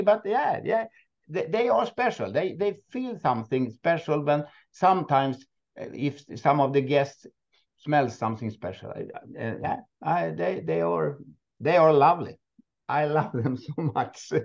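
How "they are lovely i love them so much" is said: loving laughter running through the words. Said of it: "I can hear that in your voice".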